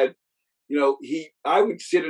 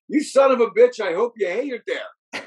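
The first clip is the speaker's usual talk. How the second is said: put-on high, small voice of a young child; 8 semitones higher than usual. Retelling his 8-year-old self interrupting his dad's call, in a little 8-year-old voice. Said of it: "this little 8-year-old voice goes".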